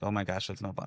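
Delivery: ordinary delivery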